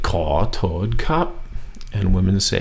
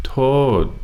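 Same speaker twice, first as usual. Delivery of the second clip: falling pitch across the word toad; 5 semitones higher than usual. Teaching tones, saying the next word with a falling tone on toad. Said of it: "falling tone on the next word".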